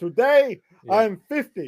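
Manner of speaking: put-on Portuguese accent. Quoting a football manager's line about a player: Jose Mourinho accent. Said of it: "I'm gonna do a Jose Mourinho accent".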